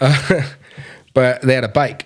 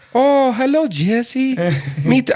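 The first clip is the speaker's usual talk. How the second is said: put-on horrible Austrian accent, very high and very slow; 12 semitones higher than usual. Retelling how a foreign woman first answered his greeting, in a horrible Austrian accent. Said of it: "that's probably a horrible Austrian accent".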